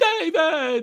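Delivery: very high-pitched calling voice. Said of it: "that I can never really imitate perfectly".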